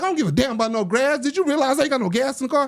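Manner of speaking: very high, irritated, fed-up, dismissive tone. Retelling what the listener said back to him, imitating an irritated woman. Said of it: "And you're like".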